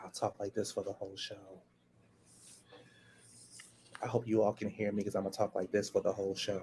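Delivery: very soft, low, hushed voice. Announcing to the audience they'll talk this way all show, in a very soft voice. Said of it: "you have to use a very soft voice".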